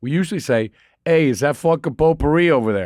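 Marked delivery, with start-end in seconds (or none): 1.0-2.9 loud, high-pitched, put-on New Jersey accent. Two hosts joke about pronunciation; one demonstrates a Jersey accent. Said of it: "a Jersey accent".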